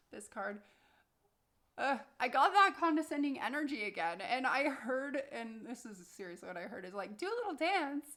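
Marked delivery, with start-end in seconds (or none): 7.1-8.0 high, silly, goofy put-on voice. A tarot reader retells what they heard on drawing a card, goofy voice. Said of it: "like it was even in a goofy voice like that".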